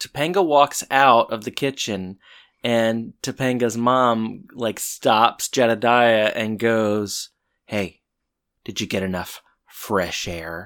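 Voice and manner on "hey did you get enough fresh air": low, sinister, menacing murderous tone. Retelling how a character questioned another: imitating a murderous tone. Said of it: "it sounded so, like, murderous".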